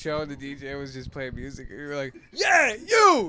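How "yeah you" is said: mock shouting, put-on yelling. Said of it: "you just yell it".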